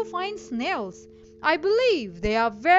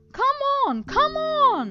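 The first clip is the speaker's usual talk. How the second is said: high-pitched, snarling fox voice; 9 semitones higher than usual. Narrator reading a story, voicing Mr. Furry Legs speaking to Lily; Mr. Furry Legs snarling. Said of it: "he snarled at her".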